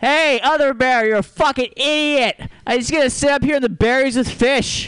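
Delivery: very high-pitched talking-bear voice. A bear who figured out nets taunts another bear, bear impression. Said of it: "here's an impression of a bear who figured out how to use nets".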